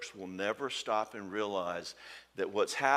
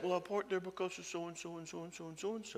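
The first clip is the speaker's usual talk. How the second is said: mock timid stammer, higher-pitched and quieter; 9 semitones higher, 6 dB quieter than usual. Describing how a client answers his scary dad, imitating timid stammering. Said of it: "one down and stammering to his scary dad".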